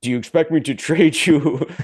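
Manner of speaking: loud, terrible fake Scottish film-star brogue. Imagining the line as a Bond villain scene, very bad Sean Connery impression. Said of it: "very, very bad impression of Sean Connery Bond".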